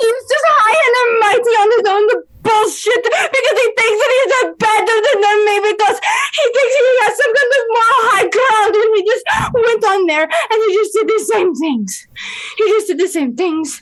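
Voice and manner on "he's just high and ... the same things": loud, high-pitched yelling at full tilt. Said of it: "And she's just yelling".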